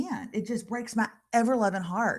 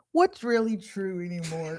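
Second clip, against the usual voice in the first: put-on flustered sheriff voice; 3 semitones lower than usual. Answering a reporter's question while pretending to be the sweet gray-headed sheriff. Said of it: "I'm gonna be the sheriff".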